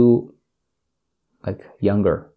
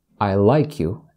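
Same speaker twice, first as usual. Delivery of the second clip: plain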